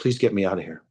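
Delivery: put-on tearful, crying voice. Retelling a woman grabbing his arm and begging: imitating a crying plea. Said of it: "She's crying".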